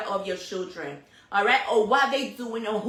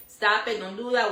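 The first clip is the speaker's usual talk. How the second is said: usual speaking voice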